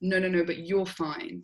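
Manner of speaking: normal talking voice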